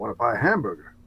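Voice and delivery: put-on, American-sounding accent. Asked to use the word hamburger in a sentence: American accent. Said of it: "try and work the word hamburger into a sentence with an American accent".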